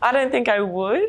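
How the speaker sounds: high-pitched intonation rising at the end.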